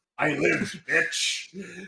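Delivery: rough, creaky villain voice. Joking about a defeated villain's comeback line: Shredder voice. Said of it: "Shredder be like".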